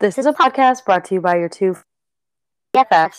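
fast, even, robotic phone-assistant voice. Introducing the podcast as its host, in a Siri voice. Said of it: "that is my best voice direction siri voice".

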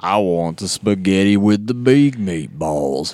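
put-on Texan accent. Retelling a movie scene where a character copies a customer: imitating a Texan accent. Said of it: "downloading the accent".

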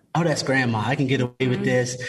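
plain

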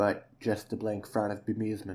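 ordinary delivery

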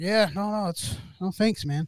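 plain

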